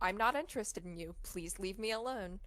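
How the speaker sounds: ordinary delivery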